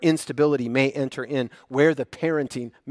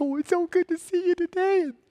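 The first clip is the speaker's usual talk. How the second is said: put-on very high cooing baby-talk toddler voice. Showing how people talk on seeing a little child: weird toddler voice. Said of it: "You put on that weird kid, toddler voice".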